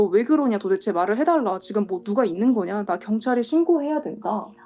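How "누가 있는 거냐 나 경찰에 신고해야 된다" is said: ordinary talk, nothing marked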